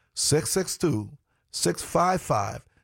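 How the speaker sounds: unhurried, slow, deliberate, each part spaced out. Repeating a phone number for listeners, said slowly. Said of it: "Let me say it slow".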